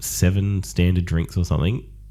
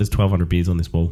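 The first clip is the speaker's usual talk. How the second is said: plain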